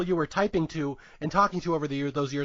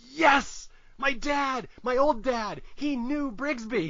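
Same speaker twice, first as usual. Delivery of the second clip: put-on very slow, stretched-out, high excited outburst; 7 semitones higher than usual. Retelling a movie scene where a character reacts: imitating an excited outburst. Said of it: "busts out a".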